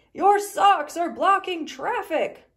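high, very loud hollering voice. The neighbors call out to Sally about her socks, hollering. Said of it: "hollered the neighbors".

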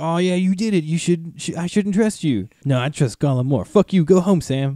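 fed-up, furious, pissed-off ranting outburst. Retelling a scene where one character turns on another: angry Frodo voice. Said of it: "Frodo gets, like, super fucking pissed".

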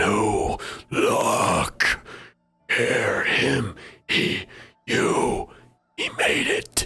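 halting, echoing voice, very slow. Answering the question whether he is here now, in an echoed voice. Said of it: "and you hear almost like an echoed voice. ... it almost seems echoed".

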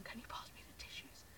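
soft, quick whisper. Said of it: "if you hear me whispering".

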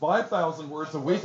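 ordinary talk

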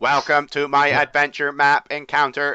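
mechanical robot voice, flat and level. Reading a map introduction aloud, in a robot voice. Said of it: "I'll read this in a robot voice".

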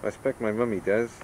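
ordinary talk

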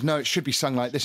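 plain

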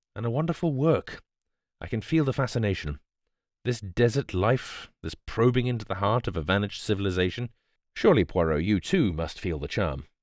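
ordinary delivery

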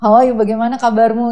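loud, rushed, rapid-fire delivery.

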